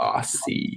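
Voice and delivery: mock American pronunciation of the word "Aussie". Mimicking how americans say the word aussie, in an american accent. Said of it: "the way that Americans say Aussie is like so funny".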